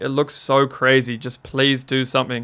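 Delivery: ordinary talk, nothing marked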